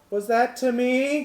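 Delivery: hesitant, tentative call, high and very loud. Narrating a scene, the speaker voices someone calling back: tentative voice. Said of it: "this like tentative voice call back".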